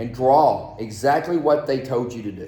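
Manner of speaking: ordinary delivery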